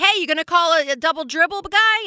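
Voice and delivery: play-acted high, protesting yell. Speaker retelling how they yelled at a referee, retelling a yell at the ref. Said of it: "I'm like yelling at the ref like".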